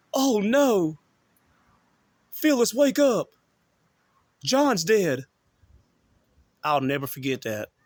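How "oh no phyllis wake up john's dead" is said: mock frantic, loud, high, drawn-out alarmed scream. Retelling being woken at night by dad's screams: imitating someone screaming. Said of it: "I get woken up to my dad screaming".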